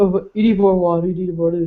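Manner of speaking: dropped, deep voice. Retelling her husband's complaint about dinner: imitating her husband's voice. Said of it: "the way she's just making his voice".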